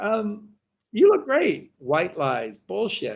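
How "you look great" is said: voice jumps very high, fibbing tone. Acting out telling someone they look great, high-pitched lying voice. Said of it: "I don't know why my voice goes high like this when I lie".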